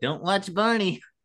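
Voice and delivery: very high giant bird puppet voice. Quoting Carol Spinney to the others on the show's talk, in a Big Bird voice. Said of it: "you imitated very well, [name]. ... More Big Bird?".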